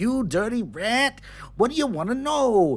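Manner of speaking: very high, squeaky little rat voice. Retelling a game session, voicing the rat answering the gnome, rat character voice. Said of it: "he started talking like this".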